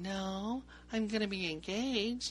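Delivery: mock giggling, very drawn out and slow. Retelling a woman's answer to a cop's question, imitating her giggling. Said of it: "she's like all giggling".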